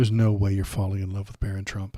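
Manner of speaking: ordinary talk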